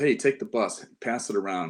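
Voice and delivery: ordinary talk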